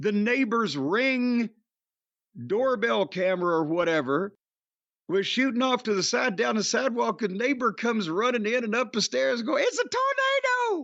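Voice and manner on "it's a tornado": squeaked-out, very high-pitched voice. Retelling how the neighbor ran up the stairs announcing it, very high voice. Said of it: "She had a very high voice".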